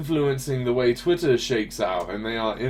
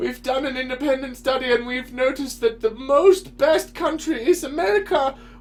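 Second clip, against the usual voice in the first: high, rising mock Russian accent. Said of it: "This is my Russian voice".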